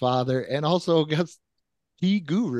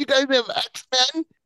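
put-on very high young boy voice; 10 semitones higher than usual. Recalling a kid at a Blockbuster counter years ago, imitating the kid's voice. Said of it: "he sounded exactly like that".

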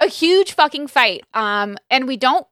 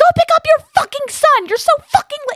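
very high shrieking yell, acted out. Retelling yelling at him from the porch to go pick up his son, re-enacting a scream. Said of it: "screaming 100%".

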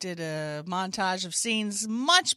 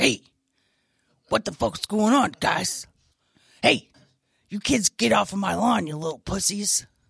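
loud, crude, cranky, ornery character voice, barked out; 5 dB louder than usual. Speaker listing the characters they do: Tina D-Ball character voice. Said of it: "The Tina D-Ball who comes out".

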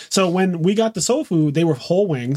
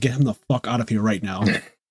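put-on whisper, lower; 6 semitones lower, 3 dB quieter than usual. Imitating sisters who whisper about an unwelcome guest, imitating sisters whispering. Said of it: "they would whisper to me".

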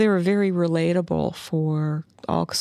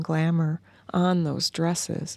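ordinary delivery

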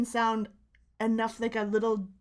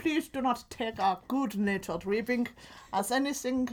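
put-on German accent; 3 dB quieter than usual. Speaker tries out a put-on German accent, unsure what it is. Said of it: "This is my German accent".

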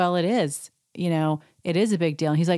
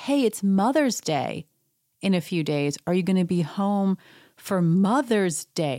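sweet, kindly, very nice delivery. Retelling a question she asked him, imitating someone asking very nicely. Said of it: "she says to him very nicely".

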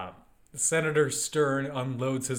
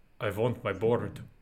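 put-on vampire-like voice, lower; 4 semitones lower than usual. Repeating a movie character's line: sounds like Count Dracula. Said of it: "He sounds like Count Dracula".

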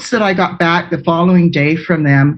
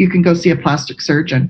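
ordinary talk

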